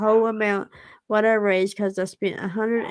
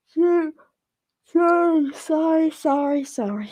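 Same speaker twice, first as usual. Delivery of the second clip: high-pitched words squeezed out through a yawn; 6 semitones higher than usual. Apologizing on camera as the speaker's eyes get heavy, yawning. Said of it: "I'm yawning now".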